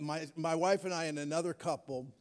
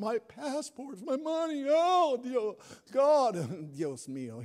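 put-on very slow, high, frantic wail, "God" stretched; 7 semitones higher than usual. Retelling a past moment of losing passports and money, retelling freaking out. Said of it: "completely freaking out".

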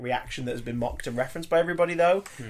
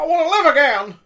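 put-on very high, very loud, belted old-movie hero yell; 13 semitones higher, 11 dB louder than usual. After noticing you sounded like him, cry out as the guy from It's a Wonderful Life. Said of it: "I just sounded like the freaking guy from It's a Wonderful Life".

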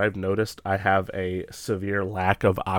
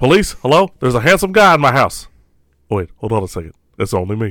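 very loud, booming, big-voiced showman delivery; 3 semitones higher, 8 dB louder than usual. Quoting a movie scene described as sounding like Johnny Bravo: Nicolas Cage sounding like Johnny Bravo. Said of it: "Nick Cage sounding like Johnny Bravo almost".

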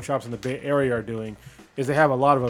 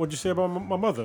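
put-on Boston accent, higher; 6 semitones higher than usual. Joking about a Boston-accented Nathan Drake casting: Mark Wahlberg Boston accent impression. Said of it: "His fucking Boston accent".

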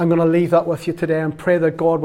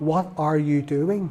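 deliberate, very slow, stretched-out speech; 7 dB quieter than usual. Retelling asking a lady a question while there, talking really slow. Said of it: "I had to learn to talk really slow there".

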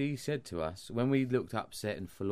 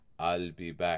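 put-on robot voice, lower; 3 semitones lower than usual. Telling Jim about his homemade costume, doing the RoboCop voice. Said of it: "But you do the voice. ... That's what you do".

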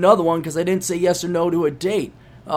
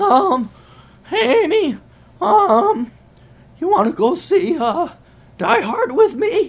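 mock voice-cracking teen voice, higher; 12 semitones higher than usual. Imitating a shy thirteen-year-old boy asking a girl out: imitating a boy's cracking voice. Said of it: "thirteen-year-old boy whose voice is cracking".

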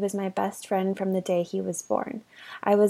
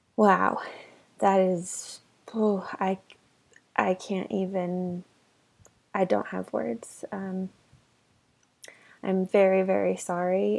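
holding back tears, slower. Speaker responding to a story about a brother's last weeks, holding back tears. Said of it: "I am trying so hard to not cry".

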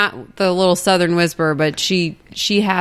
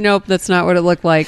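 normal talking voice

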